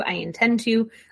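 ordinary delivery

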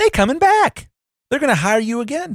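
excited exclamation.

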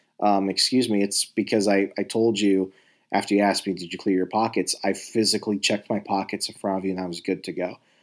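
ordinary delivery

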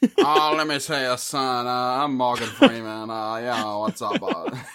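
put-on Southern rooster-style drawl. Showing an attempted Morgan Freeman voice that sounds like Foghorn Leghorn. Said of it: "like Morgan Freeman and Foghorn Leghorn had".

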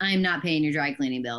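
mock blunt, flat delivery. Retelling refusing to pay a customer's dry cleaning bill: imitating a blunt refusal. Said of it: "just straight up".

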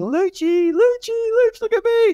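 mock very high, stretched-out calling scream. Speaker recalls standing by the cameraman during a photo shoot; retelling a scream.

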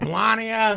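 put-on loud shout. Imagining someone calling down the hall: imitating someone shouting. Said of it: "You'd have to shout very loud".

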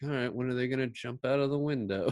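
utterly uninterested, bored, unbothered delivery. Retelling a movie scene where Lee waits by the door: imitating Bruce Lee sounding bored. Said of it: "looking so bored, like".

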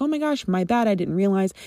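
plain

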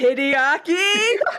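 booming dwarf voice. A dwarf calls out across the dining hall in a booming dwarf voice. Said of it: "booming voice that goes".

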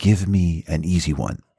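put-on whisper. Retelling a daughter's request before charades: imitating Erica's whisper. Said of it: "she whispered to me, she goes".

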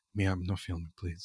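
hushed, very quiet, serious and businesslike. Retelling a man who turned serious and asked her not to film: very quiet. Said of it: "Like very quiet".

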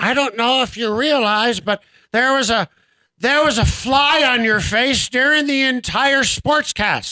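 put-on elderly woman's voice. Sportscaster retelling an older woman caller's voicemail, in her older woman's voice. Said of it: "or she said it like this, she's older".

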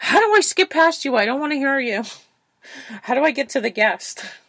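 high, loud, exasperated voice. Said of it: "And she's like".

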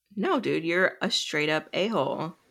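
ordinary talk, nothing marked

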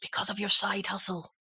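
confiding stage whisper. Retelling what the catering manager said in the lunch queue: imitating someone half-whispering. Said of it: "and then he kind of whispered".

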